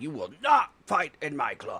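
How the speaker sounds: angry, stern, swooping mad-dad voice. Retelling a scene where a character stops a fight, mock-angry dad voice. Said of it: "just lays down like the dad's mad voice".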